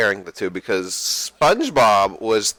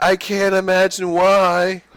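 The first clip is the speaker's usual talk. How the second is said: high, very slow, airless, dying, suffocating voice; 9 semitones higher than usual. Retelling a reply to Sandy's welcome: SpongeBob dying of suffocation voice. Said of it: "he was using the same voice".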